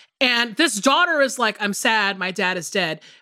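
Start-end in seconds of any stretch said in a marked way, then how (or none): none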